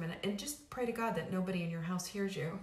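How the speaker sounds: usual speaking voice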